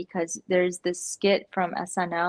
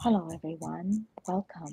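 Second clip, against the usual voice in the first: mild, gentle, softly spoken voice; 4 dB quieter than usual. Describing how a man talks, imitating his greeting: imitating a soft-spoken voice. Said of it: "He's very soft spoken".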